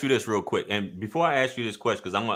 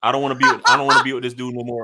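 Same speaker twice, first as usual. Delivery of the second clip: louder, laughing, mocking tone. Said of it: "that you felt like".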